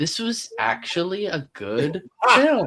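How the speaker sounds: very high, swooping, surprised sing-song cadence. Imitating the other speaker talking about a film: imitating a surprised cadence. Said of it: "you have a surprised cadence".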